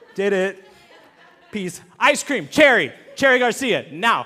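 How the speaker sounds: said through loud laughter.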